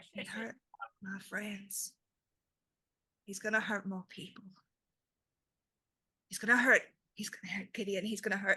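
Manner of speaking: faint, distant, almost lost voice in panicked rage. A storyteller voices a character who seems far away, in a faint, far-away voice. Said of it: "This is like faint, like almost lost sound".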